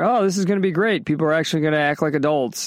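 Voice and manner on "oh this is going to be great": ordinary delivery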